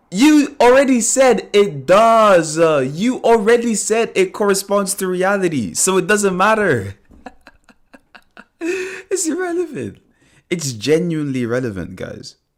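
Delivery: loud, high-pitched yelling straight into the mic. Speaking on mic to Liviano and the guys, shouting. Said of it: "Sorry for shouting at my mic".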